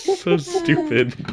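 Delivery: high-pitched, helpless giggling through the words. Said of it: "I don't know why I'm laughing".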